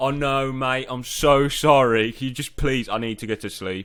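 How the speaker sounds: put-on very loud, slow, drawn-out drunken pleading voice. Retelling asking a security guard at the gate to be let in: imitating drunk self. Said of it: "completely drunk".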